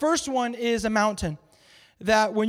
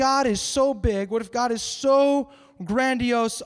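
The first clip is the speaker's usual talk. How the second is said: ordinary talk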